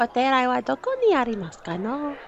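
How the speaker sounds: mock anime-character schoolgirl voice. Asked by another speaker to do an anime voice, in an anime schoolgirl voice. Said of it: "Do your anime voice".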